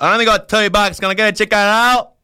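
broad Australian accent, high-pitched and loud. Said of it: "Well, repeat after me".

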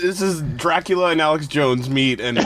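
ordinary talk

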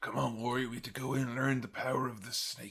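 quiet, low clenched-teeth voice. Act out Jake talking to Warrior in the Snake Pit segment, a Jake impression through gritted teeth. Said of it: "literally like through gritted teeth".

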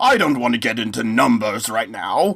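clearly put-on posh British accent. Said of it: "you pretending to do a British accent".

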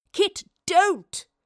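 high, loud pleading cry. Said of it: "the professor pleaded".

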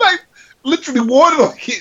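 worked-up, fired-up rant at very high pitch. Recalling how he reacted after watching it, retelling him fired up. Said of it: "he got pretty fired up".

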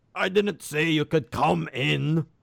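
loud voice booming and resounding. The narrator describes a dark room as an unseen voice calls out: booming voice. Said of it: "a voice comes booming through".

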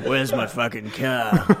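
put-on exaggerated Australian accent. Imitating the game's hero failing to climb: Mad Max stereotyped Australian accent. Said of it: "he'll just do a racist Australian accent".

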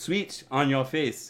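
put-on Japanese accent. Joking about a tagline for a switch on your face, japanese accent. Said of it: "That was my Japanese accent".

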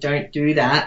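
usual speaking voice

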